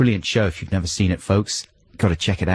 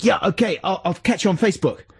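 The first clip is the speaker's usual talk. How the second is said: very loud, high-pitched, carrying voice; 11 semitones higher than usual. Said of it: "He said it very loudly".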